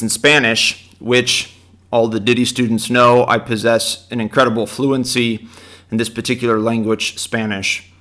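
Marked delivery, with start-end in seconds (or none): none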